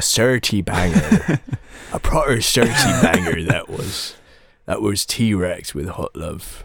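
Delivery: Somerset accent throughout. Announcing the track that just played, in a Somerset accent. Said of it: "You do a very good Somerset accent".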